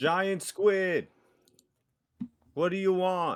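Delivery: calling out, projected across a distance. Calling out to a giant squid, yelling at the top of lungs. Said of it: "I'm yelling out at the top of my".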